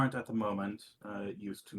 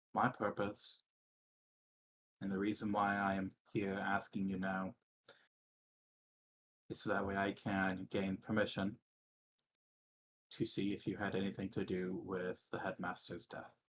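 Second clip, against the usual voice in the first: very low, hushed voice. Reading a teacher's question to a student, spoken in a very low voice. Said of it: "the teacher is saying that in a very low voice".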